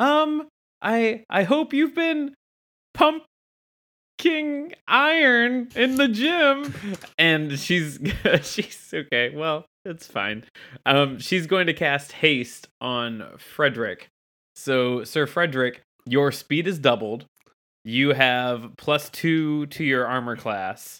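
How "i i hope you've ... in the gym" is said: high, slow, stretched-out put-on hopeful voice. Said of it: "Vilma looks at Sir Frederick and says".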